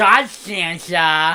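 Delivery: put-on wet, spitty voice. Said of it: "blowing spit bubbles as he talks".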